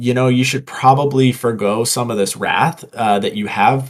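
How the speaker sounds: normal talking voice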